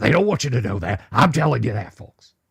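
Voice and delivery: ranting talk-host style pitch, delivered straight out. Telling folks where things are, number range by number range, do an Alex Jones impersonation. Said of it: "I'm just doing an Alex Jones impersonation".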